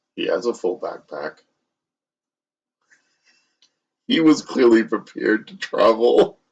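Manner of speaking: quiet, hushed whisper. In a tabletop game, telling a man who just sat down, whispering. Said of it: "I whisper to him".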